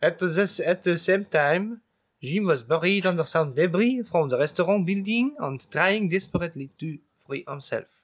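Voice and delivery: put-on French accent, read aloud. Asked by another player to read the sentence aloud, French accent. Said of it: "With a French accent".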